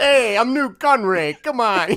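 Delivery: very loud, slow, clumsy, put-on New York accent. Trying to imitate a movie character's accent: Nute Gunray impression. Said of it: "The New Yorker's out again".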